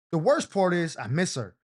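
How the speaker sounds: ordinary delivery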